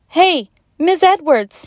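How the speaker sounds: loud, high-pitched shouting. A boy walking into the classroom calls out to the teacher, shouting. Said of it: "shouted Ben".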